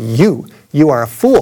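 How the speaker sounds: mock, very slow, drawn-out, deliberate pronouncement. Retelling what a man with a loudspeaker said back, imitating a booming voice. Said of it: "he said with a booming voice".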